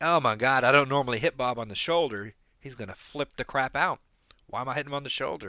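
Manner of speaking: normal talking voice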